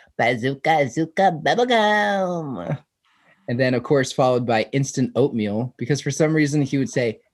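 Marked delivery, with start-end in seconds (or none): 0.2-2.8 piping, really high-pitched voice. Recalling what Ryan would always say back then, imitating Ryan's high-pitched voice. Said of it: "Ryan had a really high pitched voice and he would always go".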